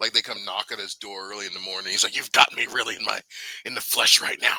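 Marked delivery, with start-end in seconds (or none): 2.2-4.6 put-on irritated, loud, fed-up grumble. Retelling how a reality-show guest answered an early door knock: imitating someone acting pissed off. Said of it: "acting all pissed off".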